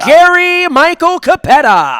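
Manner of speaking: high, drawn-out wrestling ring announcer delivery. Imitating a wrestling announcer for a guest: Gary Michael Capetta impression. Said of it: "I wanna imitate him".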